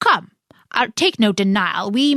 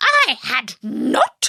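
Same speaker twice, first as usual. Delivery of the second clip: very angry, sharp cry, swooping pitch; 4 semitones higher than usual. Reading a story aloud, the narrator voices the Mouse crying out sharply and very angrily. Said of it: "cried the Mouse sharply and very angrily".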